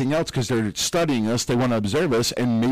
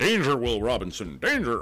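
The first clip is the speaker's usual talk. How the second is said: put-on swooping, old-style robot voice; 4 dB quieter than usual. Mid-discussion, speaker breaks into a quoted line: robot impression. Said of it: "Is that your robot impression?".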